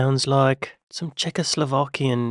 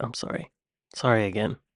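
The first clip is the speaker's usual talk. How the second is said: normal talking voice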